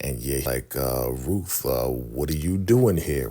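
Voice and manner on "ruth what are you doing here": mock menacing, evil voice. Retelling a show scene, quoting the villain: imitating a menacing voice. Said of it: "Real menacing, real evil".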